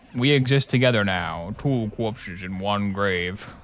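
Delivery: preacher-like reading voice. Playing a game and quoting a line: Gravemind impression. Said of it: "That's my Gravemind impression".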